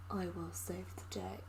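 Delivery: low deep voice. Imagining how a protective elf hero would talk, in a deep voice. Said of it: "It's like deep voice being like".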